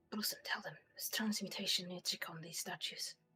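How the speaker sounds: hushed whisper. Speaking in character to Blossom, passing on a warning: whispering. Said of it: "I was whispering to Blossom".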